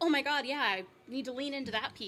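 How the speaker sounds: plain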